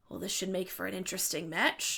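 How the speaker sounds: very deep, soft voice, as low as possible. Game master voicing a female character speaking to a player, very deep voice. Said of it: "in her very very deep voice".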